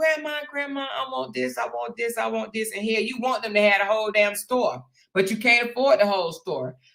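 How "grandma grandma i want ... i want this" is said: put-on soft, tiny, begging little child voice. Grandmother imitating her grandkids, imitating little grandkid voices. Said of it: "and they little voices".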